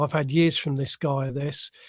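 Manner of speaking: ordinary talk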